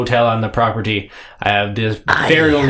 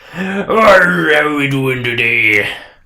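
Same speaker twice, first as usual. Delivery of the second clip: slow, drawling put-on sea captain voice; 4 semitones higher, 3 dB louder than usual. Voicing a sea captain greeting approaching players: sea captain voice. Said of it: "he says".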